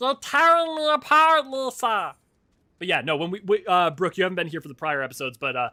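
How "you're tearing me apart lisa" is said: loud, high-pitched goblin creature voice. Demonstrating for a newcomer to the show the voice used for goblins: goblin voice. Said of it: "when we do goblins, that is the voice I use".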